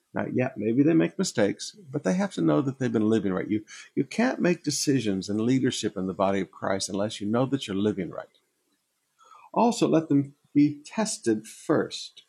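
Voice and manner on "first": emphasizing the word 'first'. Teaching about deacons, reading the passage aloud: stress on 'first'. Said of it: "Emphasis on the word first".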